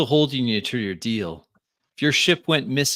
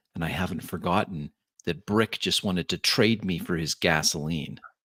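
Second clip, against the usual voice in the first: voice shifted lower into a quiet undertone; 5 semitones lower, 5 dB quieter than usual. A narrator in a role-playing game voices a woman's added remark, in a lower tone. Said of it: "in a lower tone, she says".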